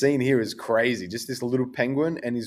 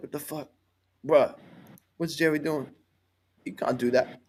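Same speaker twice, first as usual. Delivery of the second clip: bewildered, puzzled, baffled, confused outburst; 3 semitones higher than usual. Voicing a guy reacting to Jerry leaving: acting confused. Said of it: "he's so confused".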